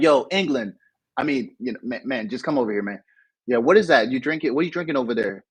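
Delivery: ordinary talk, nothing marked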